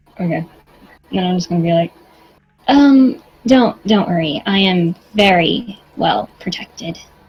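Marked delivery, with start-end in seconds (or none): 2.7-7.0 very slow, deliberate, drawn-out character voice, every word stretched. Speaking in character as Ruby during the game: Ruby's character voice. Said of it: "Don't know if that was the voice I gave her".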